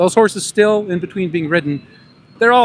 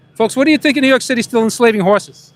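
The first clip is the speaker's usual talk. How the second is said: pitched-up put-on New York accent; 7 semitones higher, 4 dB louder than usual. Addressing people, hoping they think he's a local, talking like a New Yorker. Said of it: "I'm going to talk like a New Yorker".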